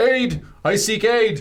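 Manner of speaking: high yelling. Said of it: "yells to the general camp".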